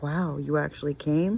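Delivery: ordinary talk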